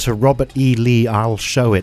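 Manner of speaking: ordinary talk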